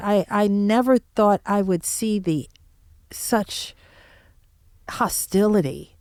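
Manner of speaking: slow, choked-up voice catching with emotion. Speaking of hostility toward journalists, choked up. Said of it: "I'm getting choked up thinking about it".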